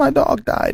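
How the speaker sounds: whispered, barely-there mumble under the breath. Retelling how a classmate answered the teacher: imitating a mumble under the breath. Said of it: "under her breath, mumbles".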